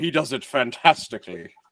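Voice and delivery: put-on Irish accent.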